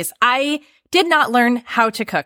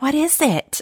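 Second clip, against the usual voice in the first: mock meek, apologetic, sheepish small voice; 4 semitones higher, 3 dB quieter than usual. Retelling a man's reaction to a dinner the speaker cooked, imitating a sheepish question. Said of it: "he's like very sheepishly".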